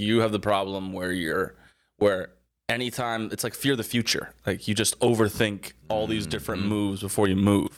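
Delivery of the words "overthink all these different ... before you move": ordinary talk, nothing marked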